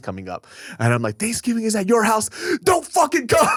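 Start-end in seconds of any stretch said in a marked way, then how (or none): 1.2-3.5 put-on shrill, very high, enraged, furious yell. Retelling telling a family member not to come to Thanksgiving: imitating own furious yelling. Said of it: "I was so fucking mad at him".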